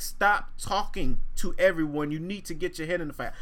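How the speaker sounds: ordinary delivery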